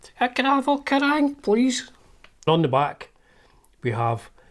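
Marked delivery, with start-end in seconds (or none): 0.2-1.9 put-on very high, young, unbroken boy's voice. Retelling their younger self at the newsagents, voice not yet broken. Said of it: "my voice hadn't broken".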